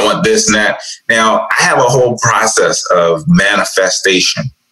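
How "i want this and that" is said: ordinary talk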